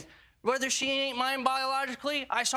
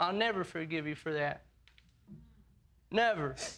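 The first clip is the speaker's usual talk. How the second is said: sobbing, tearful, crying through the words; 8 semitones lower, 3 dB quieter than usual. Reacting to hearing a paternity result: crying while talking. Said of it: "Why are you crying?".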